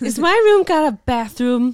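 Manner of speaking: put-on eight-year-old child voice, very loud American accent. Speaker imitates their eight-year-old son asking about his room during a move; american accent. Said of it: "he's got an American accent".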